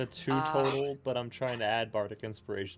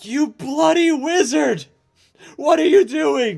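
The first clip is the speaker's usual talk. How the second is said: yelling out, shouting; 13 semitones higher, 11 dB louder than usual. Speaking in character to a wizard during a saving throw: yelling out. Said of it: "I yell out".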